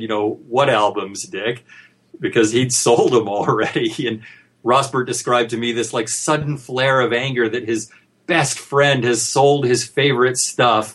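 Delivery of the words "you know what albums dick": dry, flat, expressionless deadpan delivery. Retelling how Rossbert answered his friend Dick, retelling a deadpan reply. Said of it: "sort of deadpanned at him and said".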